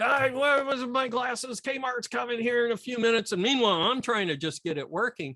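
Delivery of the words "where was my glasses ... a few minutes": play-acted high, screaming drill-sergeant yell. Speaker retelling how he screamed at them about his missing glasses, imitating drill-sergeant screaming. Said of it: "he's screaming at me like a drill sergeant".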